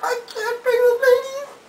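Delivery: sobbing, crying wail, very high-pitched.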